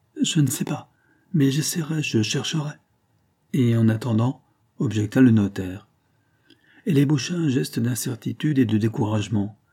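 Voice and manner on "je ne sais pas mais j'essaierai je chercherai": flustered, disconcerted stammering, higher pitch. A woman answers the notary about what work she will do, stammering, disconcerted. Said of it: "balbutia décontenancée".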